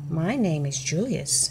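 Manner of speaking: usual speaking voice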